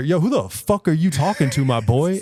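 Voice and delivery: mock slow yell. Retelling a friend's challenge to a stranger: imitating Lenny yelling. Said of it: "he's yelling at this dude".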